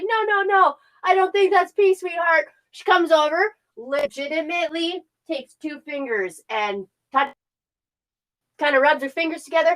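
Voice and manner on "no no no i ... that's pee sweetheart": put-on talking through a laugh, pitched up. Retelling what a laughing woman told the speaker, imitating someone laughing while talking. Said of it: "She starts laughing".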